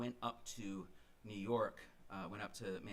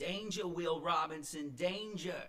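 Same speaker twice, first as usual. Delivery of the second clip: put-on Boston accent, raised and pitched up, called out; 9 semitones higher, 8 dB louder than usual. Retelling what an old friend said to him: friend's boston accent. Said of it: "in her Boston accent".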